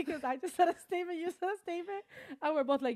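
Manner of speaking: talking through laughter. Explaining to the other speaker why a shared reply was funny, laughing while talking. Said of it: "Why are you laughing?".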